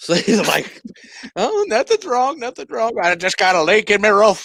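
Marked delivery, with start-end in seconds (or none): 1.4-4.5 put-on old Irish-style accent, higher. Retelling what old man Whately says while nailing boards: old man Whately's Irish-style accent. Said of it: "this Irish kinda accent".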